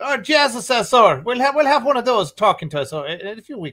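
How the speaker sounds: very high, loud Southern Irish accent. Show host announcing a future guest from Northern Ireland, Southern Irish accent. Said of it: "I can only do the Southern Ireland accent".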